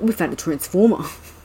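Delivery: put-on Boston accent. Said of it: "I was doing a [name] voice".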